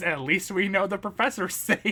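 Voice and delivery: pointed, passive-aggressive voice. Retelling a cartoon character's line, imitating a passive-aggressive remark. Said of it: "passive aggressively says".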